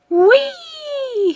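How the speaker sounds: shrill, very high, drawn-out squealing whee. Catching a ride on a planet's ring: squealing. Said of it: "He squealed".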